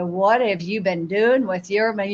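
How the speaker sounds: normal talking voice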